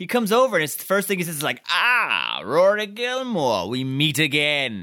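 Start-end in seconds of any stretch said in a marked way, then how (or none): 1.7-4.8 put-on very slow, drawn-out, swooping old-timey vampire voice. Retelling a character's first line in a scene: old-timey vampire voice. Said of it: "talks like a goddamn old-timey vampire".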